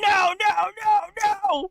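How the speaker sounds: shrill, very high, furious yelling. Imagining a man listening on hold to a court call, mock-furious yelling. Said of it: "he's furious and he's yelling".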